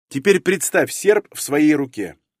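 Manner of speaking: ordinary delivery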